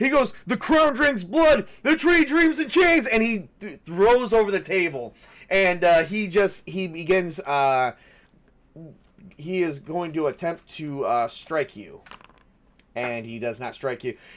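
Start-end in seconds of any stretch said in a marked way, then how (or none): 0.5-3.1 wild freaking-out rant, very high and fast. A game master voices a character after a failed charisma roll, freaking out. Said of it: "starts freaking out".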